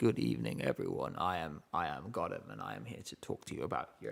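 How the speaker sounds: really deep, low voice. Imitating the other speaker doing a video: really deep voice. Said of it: "really deep voice".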